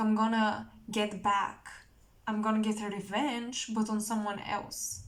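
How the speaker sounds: normal talking voice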